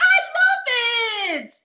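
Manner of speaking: very high, shrill, loud voice at top of range. Retelling a woman answering after a long silence, imitating a very high-pitched voice. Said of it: "in the highest pitch voice I've ever heard in my life".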